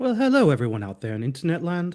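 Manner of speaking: put-on English accent throughout. Greeting the online audience as the others introduce him, put-on English accent. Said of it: "he's English today".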